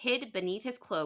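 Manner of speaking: plain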